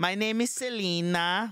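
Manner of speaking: put-on Filipino accent, slow and high. Imitating a customer support agent on the phone: imitating a filipino accent. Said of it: "the Filipino accent".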